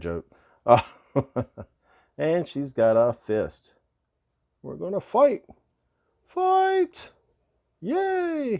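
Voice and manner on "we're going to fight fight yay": put-on poor, very high, swooping girlish voice, drawn-out "yay". Showing a doll with a fist, voicing the doll: bad girl voice. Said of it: "that's a bad girl voice".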